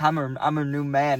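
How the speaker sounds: plain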